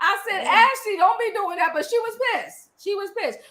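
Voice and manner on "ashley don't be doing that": put-on screamed yell. Retelling yelling at someone on tv: retelling own screaming. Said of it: "I was screaming at the T V".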